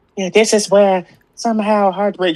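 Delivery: very high-pitched fake Australian accent.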